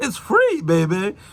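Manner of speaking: phony put-on British accent. Quoting a saying of Grandma Sue, in Grandma Sue's fake British accent. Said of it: "She put on a fake British accent".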